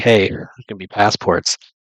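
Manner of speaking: normal talking voice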